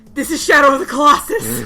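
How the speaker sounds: loud thrilled shout mixed with laughter.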